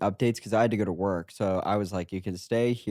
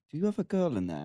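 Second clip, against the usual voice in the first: put-on British accent, higher pitch; 7 semitones higher than usual. Retelling what the boss asked through the door: imitating Malik in a British accent. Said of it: "Why is he British?".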